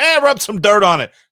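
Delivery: put-on booming, very loud old-fashioned coach voice. Imagining a medical staffer brushing off an injured player, old-timey coach voice. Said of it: "It sounds like an old timey coach".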